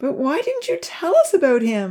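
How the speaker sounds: anxious pleading. Pressing her uncle about a creature he never mentioned: anxiously begging. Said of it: "Lily begged anxiously".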